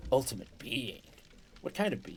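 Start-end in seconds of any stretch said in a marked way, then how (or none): 0.1-1.0 gruff put-on character voice. Repeating a phrase while trying to do the Solid Snake voice. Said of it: "I just need to try and do the Solid Snake voice, and it's the same style".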